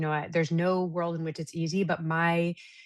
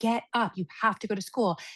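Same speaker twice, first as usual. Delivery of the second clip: acted-out high, pushed-out scolding screaming; 5 semitones higher than usual. Retelling screaming at her daughter to get up for school: imitating her own screaming. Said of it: "screaming at her to get".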